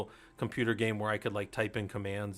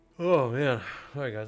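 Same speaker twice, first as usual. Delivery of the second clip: loud words spoken mid-yawn; 3 semitones higher, 5 dB louder than usual. Telling the guys how long they'll keep going, yawning. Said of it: "I'm yawning".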